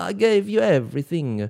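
put-on Italian accent. Showing how they all talk, with an attempted Italian accent. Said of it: "versuchen in italienischen Akzent. Alle reden so".

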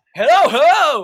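very loud, high-pitched shout. Recalling the start of a recent commercial, the speaker acts out retelling own yelling. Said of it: "why am I yelling?".

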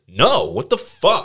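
furious yell, shrill, booming, very high and loud. Retelling own reaction when the class urged handing something over: retelling being super pissed. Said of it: "was super pissed".

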